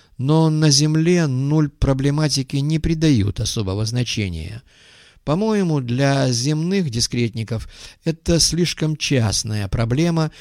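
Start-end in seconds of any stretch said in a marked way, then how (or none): none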